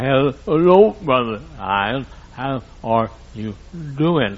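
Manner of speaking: play-acted impaired, sickly-sounding speech. Speaker telling listeners about a woman who could not walk, imitating how she talked. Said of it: "When she talked like this".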